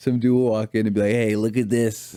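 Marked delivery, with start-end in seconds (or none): 1.1-2.2 put-on nasal Boston accent. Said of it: "They get all nasally".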